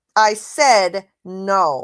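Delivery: bratty, rude, petulant tone. Retelling how a woman refused someone: imitating a rude petulant tone. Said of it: "in a rude, petulant tone".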